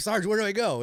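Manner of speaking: acted panic, very high voice. Retelling a radio call during a tornado warning, retelling a panicked radio call. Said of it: "and I'm panicked. You can hear it in my voice".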